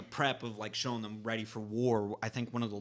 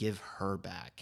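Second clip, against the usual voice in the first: muttering under the breath, lower; 3 semitones lower, 4 dB quieter than usual. Retelling how Hulk gives up: imitating Hulk saying it under his breath. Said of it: "under his breath".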